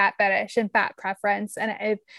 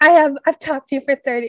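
put-on British accent, higher pitched; 4 semitones higher, 7 dB louder than usual. Retelling what a british podcast host said to them, imitating a british accent. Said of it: "You were doing an accent for 2 seconds".

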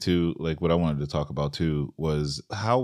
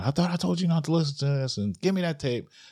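mock shrill, very high screaming and yelling; 10 semitones higher than usual. Retelling how she reacted on taking the tape: imitating someone screaming and yelling. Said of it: "she's screaming and yelling".

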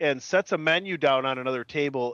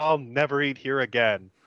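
mock-playful, joking delivery. Retelling what Elaine says after a menu catches fire, jokingly. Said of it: "Elaine jokingly turns and says".

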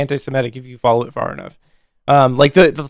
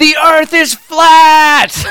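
loud, very high, very slow scream, flat and stretched; 14 semitones higher, 7 dB louder than usual. Retelling a woman in a hangar who suddenly screams: retelling a loud scream. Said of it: "she just screams".

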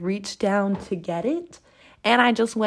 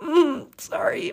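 mock weepy, high, tearful voice as if crying; 9 semitones higher than usual. Retelling her apology after falling off the ski lift: imitating her own past crying. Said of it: "and I'm just crying".

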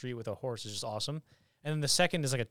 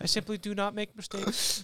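put-on French accent, higher-pitched; 8 semitones higher than usual. Asked to do the accent from the movie, speaking in Napoleon accent. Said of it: "now do the accent".

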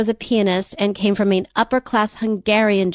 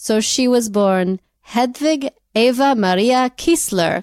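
Israeli kind of accent; 2 semitones higher than usual. Telling the other speaker a woman's birth name, Israeli kind of accent. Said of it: "I did it in an Israeli kind of accent".

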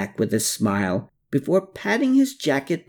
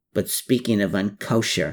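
usual speaking voice

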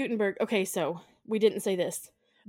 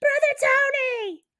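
very high, shrill scream, "Tony" drawn out; 6 dB louder than usual. Retelling a haunting, the speaker acts out a woman screaming for the priest: retelling a scream for help. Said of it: "she starts screaming for the priests".

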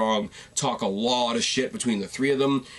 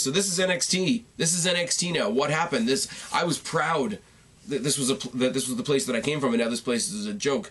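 ordinary talk

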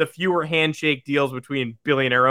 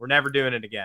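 ordinary delivery

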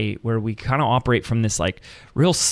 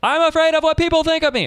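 mock, very high, sudden shout; 4 dB louder than usual. Retelling what they yelled in front of people in a lobby: retelling a yell. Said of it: "yelled something like".

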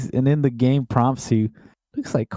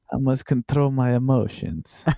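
put-on Russian accent. Retelling a flirting scene in the game: Bastilla impression, Russian-sounding. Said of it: "it sounds like a Russian".

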